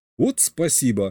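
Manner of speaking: taking offense. Narrator reads his own reply to another member of the group; offended. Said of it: "Обиделся я".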